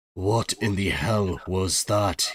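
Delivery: hushed, very slow, drawn-out voice. Voicing a character asking what happened upon seeing someone: hushed tone. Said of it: "he says, in kind of, like, a hushed tone".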